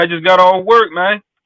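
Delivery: put-on slow Mississippi country accent, drawled. Imitating another caller's words, mocking his country accent. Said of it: "sound like my uncle in Mississippi".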